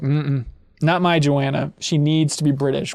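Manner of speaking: ordinary talk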